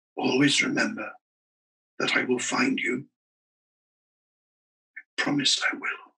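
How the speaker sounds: soft, slightly high half-whisper. Lying beside him in the dark, [name] makes a last promise, half-whispering. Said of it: "he whispered".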